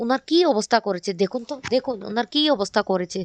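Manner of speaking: ordinary talk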